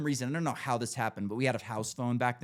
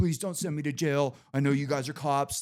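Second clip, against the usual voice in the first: put-on pleading, begging voice; 2 semitones higher than usual. Retelling a roommate begging not to be arrested: imitating someone begging. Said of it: "begging us not to arrest him".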